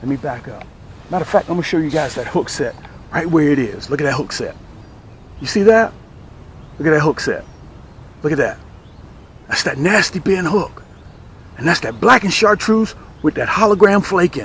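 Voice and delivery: soft hushed voice. Showing viewers a hook set early in the morning, with a lowered voice. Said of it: "I got to kind of lower my voice".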